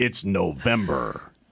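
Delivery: official, authoritative promo announcer delivery. Speaker shows how they had to announce the month, in an NFL Films voice. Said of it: "It's like NFL films or something".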